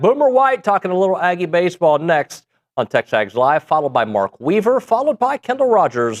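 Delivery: put-on announcer voice. Teasing the next segments before a break on the show in an announcer man voice. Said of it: "I did an announcer man voice".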